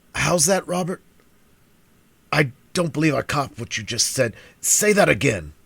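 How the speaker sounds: put-on raspy, thin-edged, high old voice. Reading fiction, an old man demanding across the table: rasping treble. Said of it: "demanded in a rasping treble".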